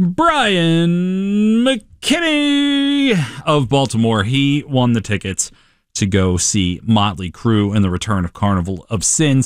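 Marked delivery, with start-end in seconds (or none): 0.0-4.2 play-by-play arena announcer, one word drawn out. A radio DJ announces a contest winner, doing it like a hockey announcer. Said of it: "so I'm going to do it like a hockey announcer".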